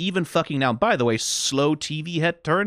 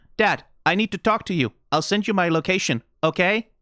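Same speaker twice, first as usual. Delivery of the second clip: affectless, flat, monotone robot voice; 3 semitones higher than usual. Asking dad to talk and offering to send a location: flat robotic voice. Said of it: "affecting the flat affect of, like, a robot voice".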